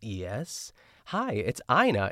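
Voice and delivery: mock eager, thrilled, loud excited voice. Retelling a phone call, imitating Ina sounding excited. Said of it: "she's so excited when she says Ina".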